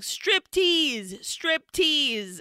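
mock yelling. Telling a story, voicing an onlooker who suddenly starts retelling a yell. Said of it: "starts yelling".

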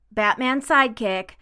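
usual speaking voice

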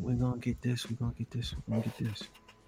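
put-on soft-spoken woman voice. Retelling what the mother said on arrival, imitating soft-spoken mother. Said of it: "My mother is very soft spoken, very calm lady".

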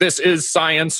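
stiff, robotic, machine-like delivery. Describing how another book treats the topic, in robot voice. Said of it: "robot voice".

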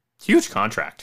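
cracked voice breaking on the words. Announcing a player's huge new contract, voice cracking. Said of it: "I think my voice just cracked there".

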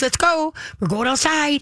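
bright, cheerful tone. Demonstrating how to put the leash on the dog: happy, chipper voice. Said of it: "in a happy, chipper voice".

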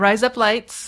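sounding Australian. Reading a phrase quickly all the way through: sounding Australian. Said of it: "You're all speaking Australian!".

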